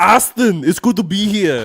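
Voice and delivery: very loud, slow, booming muscleman voice. Playing Arnold Schwarzenegger as a podcast guest: Arnold Schwarzenegger voice. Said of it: "that's a good impression".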